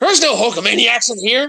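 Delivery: pro-wrestling hype voice. Retelling a Hulk Hogan promo in a cave: imitating Hulk Hogan. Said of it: "He's like".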